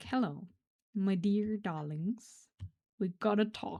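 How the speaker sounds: put-on scary calm tone. Imagining how the listener will speak instead of yelling, mock scary calm tone. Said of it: "Even scarier than yelling".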